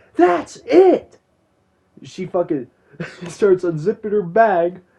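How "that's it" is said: very high, raw, rough screaming. Retelling the moment she snaps in front of the teacher: imitating her screaming. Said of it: "and then she screams".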